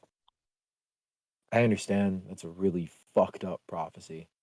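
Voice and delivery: soft, hushed stage whisper, in character. Voicing a character who comforts another about a grim prophecy: half-whispering in character. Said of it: "is whispering, he's like".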